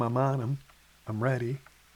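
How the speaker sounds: whispered. Retelling whispered words while a buck stood below: retelling a whisper. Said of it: "I kept whispering to Tom".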